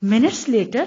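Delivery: plain reading voice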